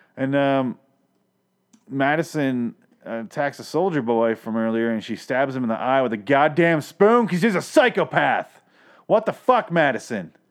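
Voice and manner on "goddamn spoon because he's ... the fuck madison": high, sudden yell, hollered out. Reacting to a character stabbing a soldier boy in the eye: yelling. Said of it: "Sorry for yelling".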